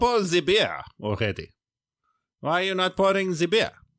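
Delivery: put-on German accent, very high-pitched. A podcast host waiting for the co-host to pour the beer: mock German accent. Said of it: "I've suddenly turned into a German".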